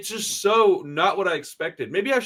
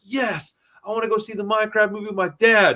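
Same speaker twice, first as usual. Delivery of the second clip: put-on thrilled, excited child voice; 4 semitones higher than usual. A father retells his son's answer to a movie invitation, imitating Parker's excitement. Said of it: "And he was so excited".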